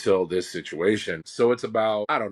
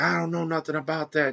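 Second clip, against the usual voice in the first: mock screaming, high, pitched-up yell; 8 semitones higher than usual. Retelling what a woman at the door yelled: imitating a woman yelling. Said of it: "She starts yelling and screaming".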